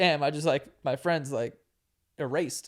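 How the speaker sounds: plain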